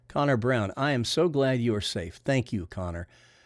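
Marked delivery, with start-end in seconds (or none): none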